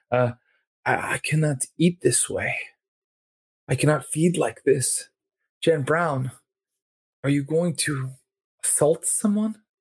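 reproachful, guilt-tripping vampire character voice. Narrating to a player, speaking as the Nosferatu woman who confronts them: Nosferatu woman voice. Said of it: "she's a small woman with the strange kind of skeletal face of a Nosferatu. / she's a small woman with the strange kind of skeletal face of a Nosferatu. She usually, you know, wears, you know, things o".

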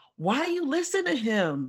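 play-acted slow, swooping yell. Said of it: "I'm yelling at the T V".

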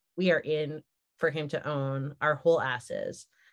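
ordinary delivery

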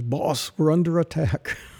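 put-on English woman's accent, straight plain delivery. Retelling a phone call from Carol at the office, in Carol's English accent. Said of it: "in her English accent".

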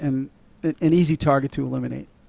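normal talking voice

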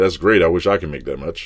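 normal talking voice

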